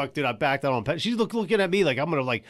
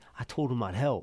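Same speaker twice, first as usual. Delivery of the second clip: put-on Virginia accent, lower and quieter; 4 semitones lower, 6 dB quieter than usual. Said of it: "He got, like, a Virginia accent".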